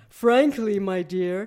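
booming, deep, full baritone roar. Narrator voices a man answering a visitor about cutting his grass, roaring deep baritone. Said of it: "he roared in his deep baritone".

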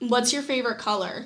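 put-on sarcastic tone. Retelling small talk with a guy who ignored her: retelling a sarcastic question. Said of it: "literally out of sarcasm".

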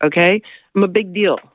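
ordinary talk

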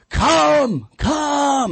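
put-on, very high, long-held, drawn-out shouting. Retelling how a novice dog owner called her dogs, imitating her yelling. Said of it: "And she's yelling".

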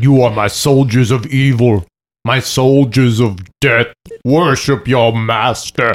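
slow, drawn-out, evil demonic voice. Retelling a moment at a concert, the speaker slips into a demon voice. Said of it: "more demon voice".

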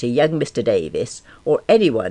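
ordinary delivery

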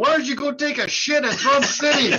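high-pitched yell. Telling a story about men yelling at each other, retelling Jaeger's yell. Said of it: "Jaeger yells at him".

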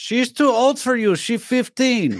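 very high character voice, pitched way up. Retelling the film ending where Borat rushes into the room: Borat voice. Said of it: "Borat rushes into the room and goes".

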